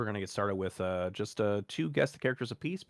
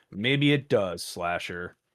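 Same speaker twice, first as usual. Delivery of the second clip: ordinary talk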